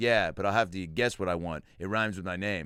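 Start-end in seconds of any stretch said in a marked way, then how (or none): none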